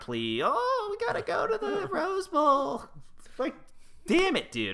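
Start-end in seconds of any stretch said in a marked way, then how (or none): 0.4-2.8 very high fairy-tale witch voice, sounding like it is dying. Quoting a Mac Brown plea in a Mac Brown impression, dying witch. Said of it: "I love your impression of Mac Brown. That's like, it's it's like a dying witch from like Hansel and Gretel".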